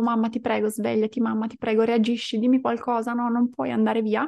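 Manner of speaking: fast, weeping, sobbing, frantic and desperate begging. Recounting a dream, speaker re-enacts begging her unresponsive mother, retelling desperate crying pleas. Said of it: "ho iniziato a piangere nel sogno disperata".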